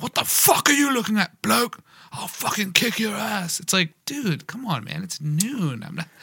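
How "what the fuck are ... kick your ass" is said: put-on high, rowdy, screaming drunk voice, British. Retelling a shirtless drunk British man in a cafe: imitating a screaming drunk Brit. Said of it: "they're just screaming".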